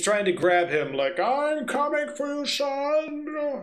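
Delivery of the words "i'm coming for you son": weird creature screech, very high and very slow. Narrator voicing a creature reaching for a man's son, screaming weird creature voice. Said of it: "he's screaming that in weird creature voice".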